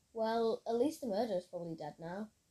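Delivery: plain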